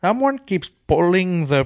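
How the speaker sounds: high, put-on cartoon leprechaun Irish accent. Asked to imitate someone who might be Irish, trying a leprechaun voice. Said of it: "I was going leprechaun".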